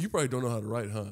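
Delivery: joking tone. Recounting to the listener what the speaker once said to them, retelling a joking remark.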